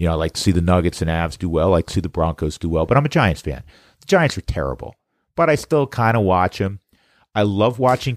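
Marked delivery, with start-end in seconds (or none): 4.0-8.2 slipping into New York accent with swooping pitch. Speaker who grew up in New York, breaking into a New York accent. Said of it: "kind of broke into like".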